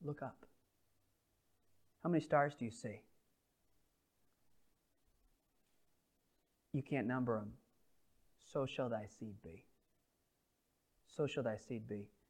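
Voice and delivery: gentle, hushed, quiet, soft-spoken speech. Narrating the Abram story, voicing God speaking to Abram in a quiet voice. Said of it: "God says in a quiet voice to Abram".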